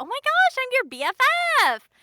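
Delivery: super silly, very high, loud, bouncy character voice. A voice actor shows the characters they keep booking: high-pitched voice. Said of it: "definitely that high end".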